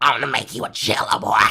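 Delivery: put-on crotchety, cranky old-woman voice. Retelling what an old woman said to him: crotchety Joan Rivers voice. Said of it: "with this crotchety fucking Joan Rivers voice".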